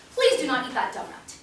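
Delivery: softened polite tone. Repeating the warning about the donut after being called aggressive: less assertive. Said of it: "I'll be less assertive".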